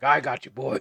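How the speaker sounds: put-on old man's voice, loud. Acting out the old guy who rescues both boys: old guy voice. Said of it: "this is where the old guy comes in. He's like".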